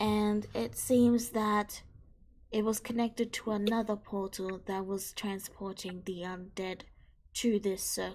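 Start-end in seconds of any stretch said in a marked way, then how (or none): none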